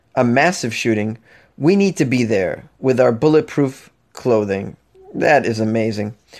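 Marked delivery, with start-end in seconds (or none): none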